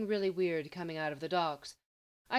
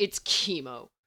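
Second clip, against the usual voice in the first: disgusted, spat out, lower pitch; 3 semitones lower, 4 dB louder than usual. Lex answers Mercy, spat disgustedly. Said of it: "Lex spat disgustedly".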